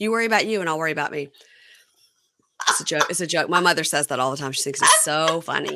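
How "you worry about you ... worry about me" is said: ordinary talk, nothing marked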